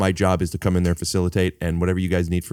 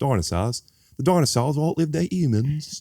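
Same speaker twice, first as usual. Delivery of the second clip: put-on Australian accent, pitched up; 7 semitones higher than usual. Redoing the dinosaur line on request, Sam Neill with Australian accent. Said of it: "do it like Sam Neill with the Australian accent".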